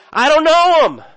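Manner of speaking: put-on very high, shrill, very loud angry shout. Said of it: "swearing and cursing".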